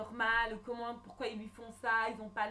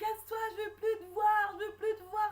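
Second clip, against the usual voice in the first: mock sobbing, upset, very high crying shout; 11 semitones higher, 3 dB louder than usual. Retelling how Michael answered from the window: imitating Michael crying. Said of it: "il dit casse-toi en pleurant".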